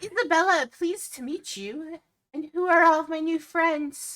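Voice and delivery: gentle, very high sprite voice. Voicing a small fairy who welcomes the players: soft, quiet fairy voice. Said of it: "she's very soft, quiet".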